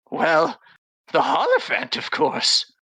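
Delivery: put-on croaky old woman voice. Game master voicing a hag answering the party's question: croaking hag voice. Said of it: "she croaks".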